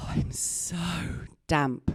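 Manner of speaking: very slow, drawn-out, put-on seductive sexy voice. Retelling a bedroom moment, doing the line in a best sexy voice. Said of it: "I put my best sexy voice on".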